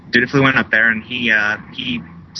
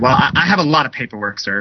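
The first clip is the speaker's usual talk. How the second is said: irritated, frustrated, exasperated tone. Retelling a court hearing where the judge answers him, imitating a frustrated judge. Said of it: "in a frustrated voice said".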